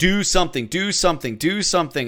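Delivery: ordinary talk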